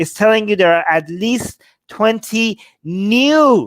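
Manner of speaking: slow, high, loud stress on "new".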